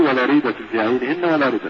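plain

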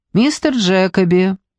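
ordinary delivery

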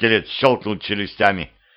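plain

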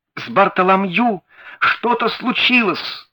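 high, terrified, frightened cry of alarm. A man runs out of the house with arms outstretched; exclaimed. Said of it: "воскликнул он".

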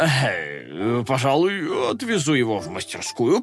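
plain reading voice

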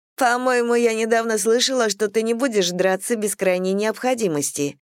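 scoffing, teasing, mocking tone. A woman answers another woman's threat with a remark, mocking. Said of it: "с издевкой заметила Бет".

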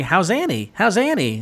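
put-on villain taunting tone. Recounting a TV scene where a character taunts after smashing a mirror; imitating Joker-esque mockery. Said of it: "In a very Joker-esque tone".

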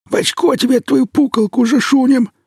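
lisping, hoarse, rasping voice. Narrator reads a pursuer shouting at a fleeing young man, lisping hoarse rasp. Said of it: "Тот же шепелявый хрип".

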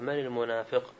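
ordinary talk

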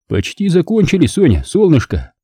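high, mocking, needling, snide reply. The narrator answers a woman who just walked in, snide. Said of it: "ехидно ответил я".

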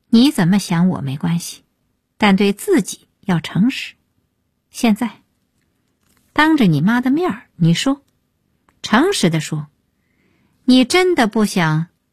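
plain

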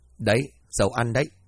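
ordinary delivery, nothing marked

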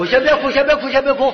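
high, loud, urgent calming hush, called out.

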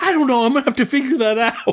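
mock, very high, rushed, panicked babble. Retelling a TV scene, imitating Mallory freaking out. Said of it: "Mallory freaks out".

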